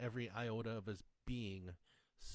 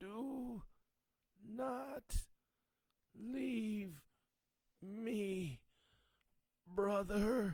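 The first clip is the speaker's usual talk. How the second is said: very high-pitched, very slow, drawn-out gurgling voice; 11 semitones higher than usual. A pile of sludge calls out to Nicholas as he walks away, soft gurgling voice. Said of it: "a soft, gurgling voice".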